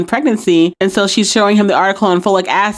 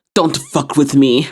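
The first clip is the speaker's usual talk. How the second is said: a little put-on Russian accent, laid lightly; 6 semitones lower than usual. Retelling a scene where one inmate mocks another: Russian accent imitating Red. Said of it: "puts on a little Russian accent, imitating Red".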